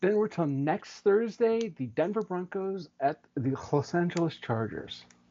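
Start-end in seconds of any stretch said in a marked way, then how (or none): 1.8-5.0 heavy, emphatic delivery with every word stressed. Announcing next Thursday's game to another speaker: said with great emphasis. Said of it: "you say it with such emphasis".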